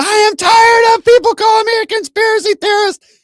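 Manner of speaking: very high, shrill, loud screaming rant. Telling another speaker what Laura Loomer said, imitating Laura Loomer screaming. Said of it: "she's screaming".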